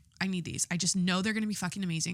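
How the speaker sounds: ordinary talk, nothing marked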